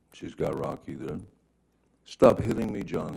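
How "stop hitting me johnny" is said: frantic, upset, high, freaked-out scream. Recounting what was heard from twenty feet away, imitating Amber Heard's freaked-out scream. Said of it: "she's screaming in, in her best um, freaked out, upset voice".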